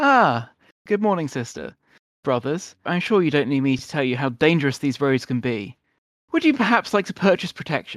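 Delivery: bright, brisk, cheerful, self-assured, confident friendliness. A stranger steps out in front of the travelers and greets them, cheerful, confident. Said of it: "in a very sort of cheerful, confident way".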